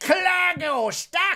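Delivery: put-on sort-of Scottish accent. Voicing a character caught in weeds: vaguely Scottish voice. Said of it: "like, Scottish or something".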